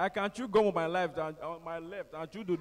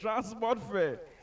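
high-pitched, called-out tone; 5 semitones higher than usual. Retelling a heckle from the back: imitating a guy shouting. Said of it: "One guy from the back just shouted".

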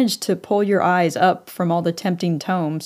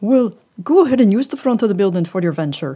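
very bad put-on Northumberland accent, rattled off; 3 dB louder than usual. Telling a story for fun, quote accommodating Stuart's reply in a bad Northumberland accent. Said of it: "that was the worst Northumberland accent".

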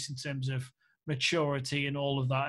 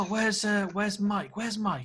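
put-on posh English accent, higher-pitched; 6 semitones higher than usual. Recalling a stranger in the editor's chair asking for Mike, imitating a posh English accent. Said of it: "He had this really posh English accent".

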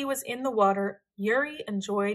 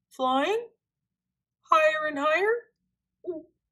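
high-pitched, gulping, swallowing hard; 6 semitones higher, 3 dB louder than usual. Narrator reads a character in a rising balloon answering his friend: gulping. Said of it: "Lars gulped".

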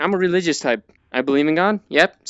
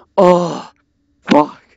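loud, panicked cursing outburst; 6 dB louder than usual. Playing a scary game and naming it: panicking. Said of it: "I am panicking right now".

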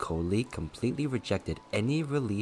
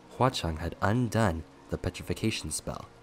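plain

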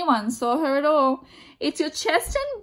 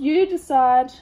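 ordinary delivery

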